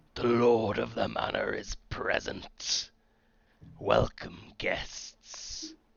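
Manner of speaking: rough, raspy, thundering, loud booming voice. Narrating a game scene, the speaker voices a figure welcoming guests: booming, raspy voice. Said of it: "a booming, raspy voice sounds out".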